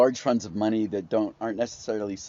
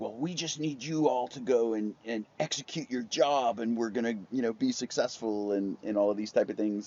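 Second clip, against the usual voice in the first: soft, patronising, condescending talk-down; 5 dB quieter than usual. Imitating how the people taking the company public talk to employees, mock-condescending. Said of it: "very condescendingly say things like".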